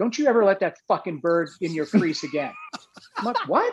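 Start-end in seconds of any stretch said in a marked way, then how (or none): 0.0-2.5 mock-angry, pissed-off man's voice. Retelling what an angry man said outside, imitating a pissed-off man. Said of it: "he's pissed".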